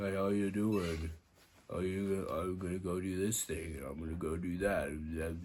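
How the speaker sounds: deadpan, flat, droning monotone, very low-pitched. Criticizing an actor's performance in a movie, imitating his flat monotone. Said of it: "the same monotone voice".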